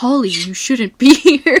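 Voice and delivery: put-on frightened tone. Retelling a video scene, doing an impression of the scared boyfriend. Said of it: "You like my impression?".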